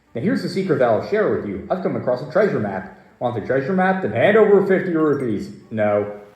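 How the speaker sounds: ordinary delivery, nothing marked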